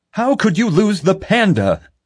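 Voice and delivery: very high, frustrated, flipping-out screaming. Reading a frustrated man's line to a security officer: screaming. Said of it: "he screamed".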